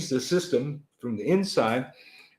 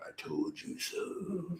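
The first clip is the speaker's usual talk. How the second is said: ominous, foreboding, very hushed fatherly whisper; 7 semitones higher, 14 dB quieter than usual. A father tells his kids they'll hear his voice in their heads; put-on ominous voice. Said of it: "my ominous voice in your head going".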